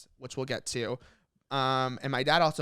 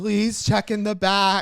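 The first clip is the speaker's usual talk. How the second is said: mock tearful, childlike pleading, higher and louder; 8 semitones higher, 9 dB louder than usual. Retelling begging at Blockbuster as a child: imitating own childhood crying. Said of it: "I just remember crying and being like".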